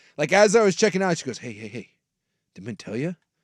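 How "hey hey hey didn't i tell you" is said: put-on low, secretive, hushed voice, lower and quieter. Retelling a cashier leaning in at checkout in a low voice. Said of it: "We used the low voice".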